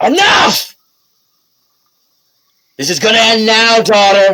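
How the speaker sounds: high, loud furious cry. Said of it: "She goes".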